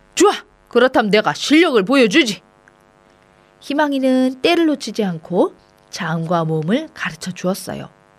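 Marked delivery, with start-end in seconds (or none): 0.2-2.5 taking offense, flaring up in an outburst. A village schoolmaster, teased about his slow progress, flaring up. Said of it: "김홍이 발끈했어요".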